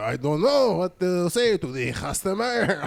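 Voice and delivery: put-on French accent with broken English. Retelling what a French guy said in a meeting: imitating French guy's broken English. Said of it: "he rolled his English".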